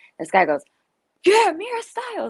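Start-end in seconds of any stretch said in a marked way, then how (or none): 1.3-2.3 put-on loud shout, higher. Retelling a stranger calling out outside a store: imitating someone shouting loudly. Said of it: "really loud".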